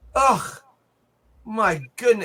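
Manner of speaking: put-on Yiddish-tinged accent.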